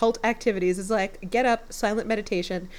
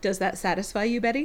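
acted, unsettling, skin-crawling, creepy, suggestive tone. Retelling a scene where a shirtless man spins: imitating a creepy line. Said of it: "then he really creepily says".

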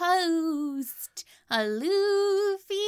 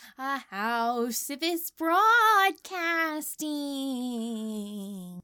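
odd eerie spooky put-on voice; 5 semitones lower than usual. A host opens the broadcast in a voice a co-host calls weird: weird spooky voice. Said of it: "why are you doing it weird today?".

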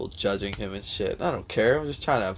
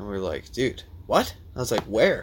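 ordinary talk

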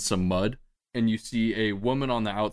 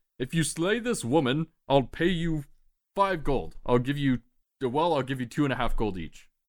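calling out loudly; 5 semitones higher than usual. Voicing a man locked inside a cart, resisting the door: shouting. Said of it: "he's shouting out as he says".

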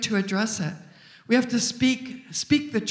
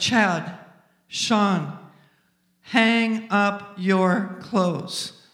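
firm but loving, very drawn out; 2 semitones lower than usual. A mother re-enacting how she addresses her children, acting out a firm, loving tone. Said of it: "my voice tone changed... Different tone".

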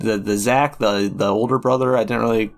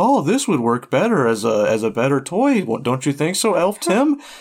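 kindly, sing-song, pitched up, swooping; 5 semitones higher than usual. Retelling a kind moment in the film, imitating Santa Claus being kind. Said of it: "he, as Santa Claus, where he's just like".

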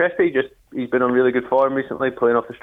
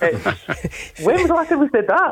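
surprised, excited high-pitched voice, higher; 12 semitones higher than usual. Talking about the team being unbeaten in a calendar year: surprised, high-pitched voice. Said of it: "listen to the surprise in his voice".

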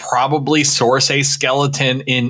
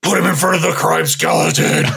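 rough, creaky heroic character voice. Joking with co-hosts about a crime skeleton; Batman impression. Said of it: "That's my best Batman".

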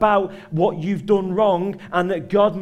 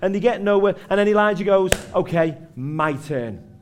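ordinary talk, nothing marked

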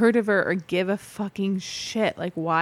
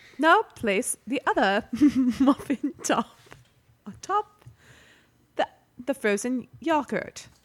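high put-on British accent, woman's voice; 5 semitones higher than usual. Imitating a machine's spoken instructions, in a British woman's voice. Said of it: "in like a British woman's voice".

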